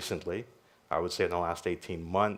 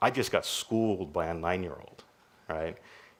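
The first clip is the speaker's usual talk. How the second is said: ordinary delivery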